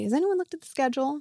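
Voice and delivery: very quiet, hushed voice. Retelling a question Al asked the group: imitating Al speaking very quietly. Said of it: "said very quietly".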